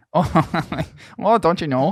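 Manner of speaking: high, sing-song mock Canadian accent.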